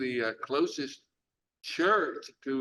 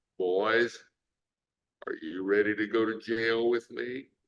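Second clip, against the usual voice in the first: voice dropped into a deep register; 4 semitones lower than usual. Retelling what Daddy King asked at breakfast: imitating a deep voice. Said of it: "he said in his deep voice".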